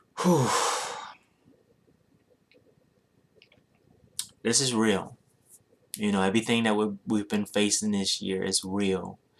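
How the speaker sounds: trying not to get emotional. Speaking to the audience, trying not to get emotional. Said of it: "I'm trying not to even get emotional now".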